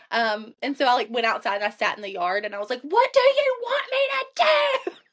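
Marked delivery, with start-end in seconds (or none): 2.8-4.9 very high, desperate, pleading yell. Speaker recalls going outside and sitting in the yard; retelling a desperate yell. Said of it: "maybe if I go outside and I yell it".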